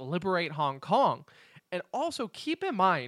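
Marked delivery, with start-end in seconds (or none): none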